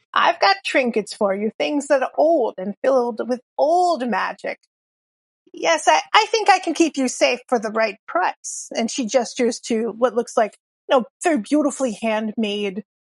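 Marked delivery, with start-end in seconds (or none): 0.2-8.7 put-on old witch accent, crone-like. Speaker voices a character for listeners: old witch accent. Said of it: "my old witch accent".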